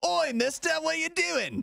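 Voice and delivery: very high, brash, rough British "oi" accent. Discussing accents with another speaker, giving an example in a put-on British accent. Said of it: "British accent".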